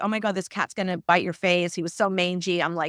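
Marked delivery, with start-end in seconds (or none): none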